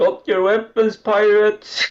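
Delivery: high-pitched, loud yelled words. Voicing a character calling out to the pirates: yelling out. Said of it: "just yell out".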